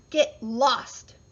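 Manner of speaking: rude, loud yell. The little pig answers the wolf asking to come in: rude shout. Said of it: "shouted the rude little pig".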